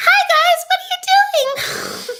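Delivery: very high, loud, breezy voice. Recapping a fake setup scene, he walks in on a woman and her sisters: high-pitched Corey impression. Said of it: "that man has a high ass voice".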